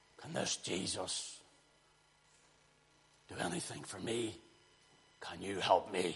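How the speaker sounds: put-on deep male voice. Retelling how a deep man's voice came out of a woman, imitating a deep man's voice. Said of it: "It was like a deep man's voice".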